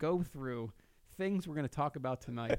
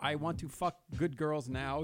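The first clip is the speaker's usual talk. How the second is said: put-on Dominican accent, slower. Speaker quotes what a man said when he called them, retelling in a Dominican accent. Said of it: "I don't know if that was my Dominican accent or not".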